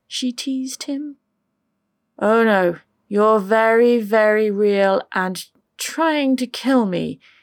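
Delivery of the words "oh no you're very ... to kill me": loud groaning words, protesting tone. A man answers a woman's teasing question as she squeezes him: groaning. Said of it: "he groaned out".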